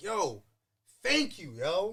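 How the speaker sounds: very slow, put-on tearful crying voice. Retelling thanking his brother in the car: retelling crying thanks. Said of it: "I'm literally crying in the car like".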